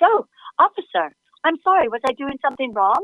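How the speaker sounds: put-on British accent. Retelling what a coworker said to a Texas traffic officer, in a British accent. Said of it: "she had the great British accent".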